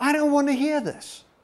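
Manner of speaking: very high-pitched squealing voice. Imitating people who react to the preaching: imitating people squealing. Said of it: "I see some people squealing".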